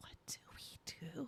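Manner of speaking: very quiet, hushed, breathy whisper. In a role-play game, a player's character whispers to a companion, whispering. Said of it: "whisper to her".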